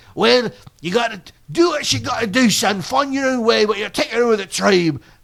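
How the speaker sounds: heavy put-on Scottish brogue. Acting out a father answering his son, in a thick Scottish brogue. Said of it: "his voice is one notch below pimply faced teen".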